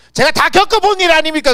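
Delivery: high, loud, indignant comeback.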